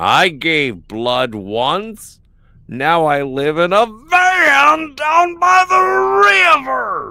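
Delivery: "van" dragged out long and loud. Reading a line after a request for an impression: bad Chris Farley impression. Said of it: "that was a little bit more Alex Jones than Chris Farley".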